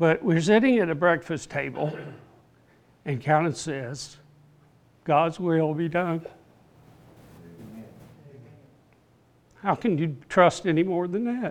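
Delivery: emotional, choking up, fighting back emotion. Speaker recalls a breakfast with Carolyn after her cancer news: getting emotional. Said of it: "I'm sorry, I'm getting emotional".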